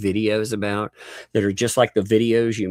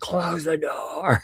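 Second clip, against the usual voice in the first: put-on raised yell, pitched up; 8 semitones higher than usual. Retelling yelling at someone to close the door: imitating own loud yell. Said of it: "I had to yell".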